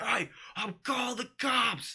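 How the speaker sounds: mock very high, shrill hollering. Retelling how a neighbor threatened to call the cops: imitating someone yelling. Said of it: "just starts yelling".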